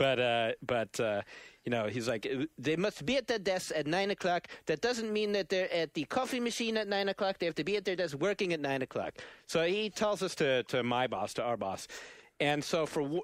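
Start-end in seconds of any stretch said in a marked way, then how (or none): 2.6-9.1 high-pitched, put-on European accent. Retelling what the big boss told the workers: imitating a European boss's accent. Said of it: "I'm doing a variety of accents here".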